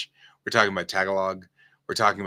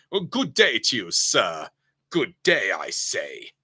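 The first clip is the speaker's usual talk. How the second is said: put-on British accent throughout, sing-song. Explaining how Americans say a greeting, in a British English accent. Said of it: "we have to say it in British English".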